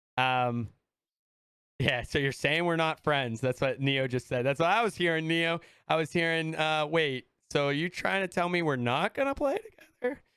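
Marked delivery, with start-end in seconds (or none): 6.9-10.2 voice breaking and cracking, pitch rising. Retelling own reaction to hearing they're not friends: imitating own voice cracking. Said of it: "as my voice cracks".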